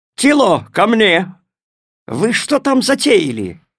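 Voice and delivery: high-pitched, shouted calling voice. Hearing the dog growl and the cat hiss, a character calls the dog: shouted. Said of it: "крикнул".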